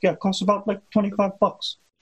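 very high, signature tone of voice. Imitating Bernie's tone when he calls an amount of money small: Bernie Sanders tone of voice. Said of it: "he has this tone of voice that he does".

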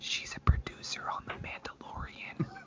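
slow, very quiet, hushed, secretive whisper. Revealing a surprise into the microphone: whispered. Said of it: "I'm gonna whisper this into the microphone".

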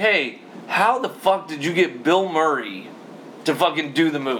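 ordinary talk

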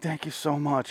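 high, hushed whisper with a southern twang. Retelling what a man said to him, imitating his whispering with a southern twang. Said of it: "he's constantly whispering like this".

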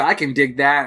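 usual speaking voice

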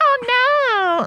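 put-on very high baby voice, drawn-out "oh". Describing a woman whose dog keeps peeing everywhere, speaker imitates her baby voice. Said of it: "talks on this baby voice".

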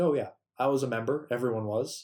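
normal talking voice

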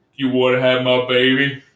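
very deep voice, dropped as low as it goes. Retelling how Shangela leaned in close to ask something, in the deepest voice. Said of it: "says in like the deepest voice".

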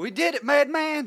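stronger Southern accent. Joking about a face tattoo, stronger southern accent. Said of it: "my southern accent just came out stronger there".

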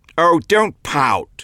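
high, carrying yell, calling out. Reading a man yelling after the narrator, who walks off toward the car: yelling after someone. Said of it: "he yelled after me".

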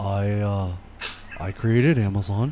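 put-on flat monotone. Joking about how a billionaire talks, monotone Jeff Bezos impression. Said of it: "You sound like fucking Eeyore".

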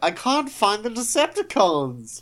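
high, loud, baffled cop voice. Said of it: "he's like".

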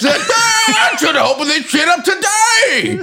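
put-on old prospector voice, very high, slow and drawn out. Mocking the governor announcing the state reopening: Greg Abbott as an old prospector. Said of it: "So you have an old prospector".

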